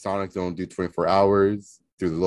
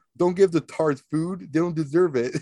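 very high, shrill, mock screeching yell; 9 semitones higher than usual. Retelling a drive-thru story, acting out what someone screamed: imitating someone screaming. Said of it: "You hear Alex screaming".

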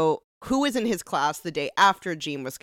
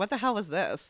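normal talking voice

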